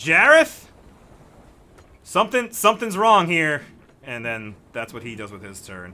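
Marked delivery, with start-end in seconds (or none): 0.0-3.6 put-on drunk confused shout. Voicing a drunk, confused dockhand shouting back: drunk confused shout. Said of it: "he shouts back".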